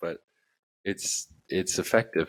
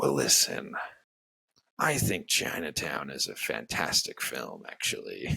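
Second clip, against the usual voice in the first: slow, creaky, rough voice, drawn out; 5 semitones lower than usual. Retelling an actor's answer to an interviewer: Jack Nicholson impression. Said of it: "great impression".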